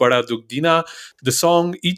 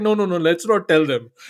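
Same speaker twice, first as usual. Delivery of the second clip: normal talking voice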